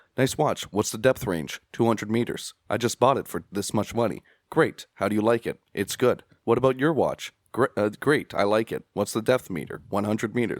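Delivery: mock robotic, flat, monotone delivery. Retelling the film characters' watch conversation: imitating robotic flat speech. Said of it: "speaking very robotically in this conversation".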